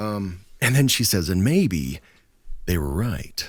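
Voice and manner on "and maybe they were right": dramatic, hammed-up storyteller narrator voice. Retelling the closing line she says, narrator voice. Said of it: "I turned my narrator voice on for that one too".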